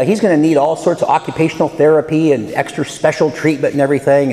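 ordinary talk

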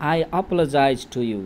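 normal talking voice

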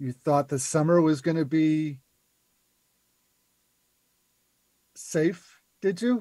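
hushed whisper, close and quiet. A game master voicing a character who comes up behind a player on the way to class, whispering. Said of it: "whispers in your ear".

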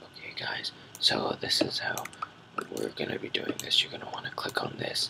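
very quiet, hushed whispering voice. Imitating a tutorial maker recording while their parents sleep: imitating a whispering tutorial maker. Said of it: "that makes them have to whisper".

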